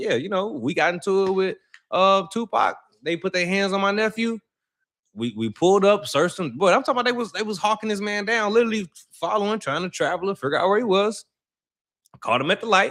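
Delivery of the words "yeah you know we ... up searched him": ordinary talk, nothing marked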